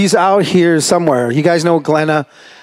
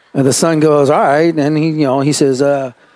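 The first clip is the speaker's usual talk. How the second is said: ordinary delivery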